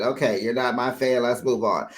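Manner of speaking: ordinary talk, nothing marked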